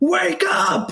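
high put-on screaming.

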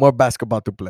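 put-on Slovenian accent. Adding to the quote of a basketball player: imitating Luka Doncic's accent. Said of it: "In his accent".

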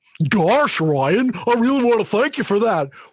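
very loud, high, silly cartoon dog voice. Thanking Ryan during the show, in Goofy voice. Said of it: "where you're in Goofy's voice".

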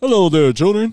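belted out, big, loud and high. Trying to recall a South Park character, speaker does Chef from South Park voice. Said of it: "He's all".

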